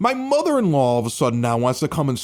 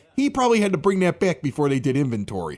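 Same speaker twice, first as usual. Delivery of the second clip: ordinary delivery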